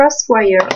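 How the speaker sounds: best put-on English accent on "crosswires". Reading out a MAC lipstick shade name: best English accent. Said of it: "Je prends mon plus bel accent anglais pour vous le dire".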